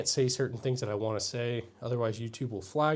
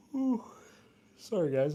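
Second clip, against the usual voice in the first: yawning while speaking, higher pitch; 6 semitones higher than usual. Streamer apologizes to viewers after streaming late last night, yawning. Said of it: "I'm yawning".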